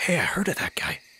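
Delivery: soft, hushed, whispered aside. Voicing a lieutenant in a game scene: whispering.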